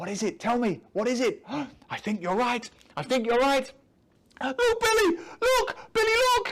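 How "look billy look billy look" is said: frightened, trembling, shaky, very high, scared cry. Narrator reading the narrator-character's cry to billy, scared, shaky voice. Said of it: "I cry in my scared, shaky voice".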